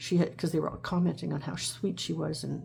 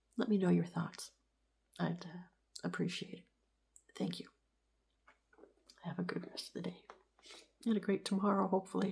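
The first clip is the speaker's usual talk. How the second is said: tearful voice, quieter; 2 semitones higher, 6 dB quieter than usual. Talking about seeing a pet again after death, crying while talking. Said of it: "Sorry for crying so much".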